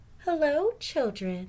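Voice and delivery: sugary-sweet, high voice. Reading a story aloud, someone greets the children in a sweet voice. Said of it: "someone said in a sweet voice".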